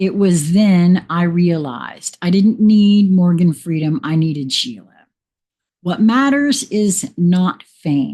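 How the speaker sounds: ordinary talk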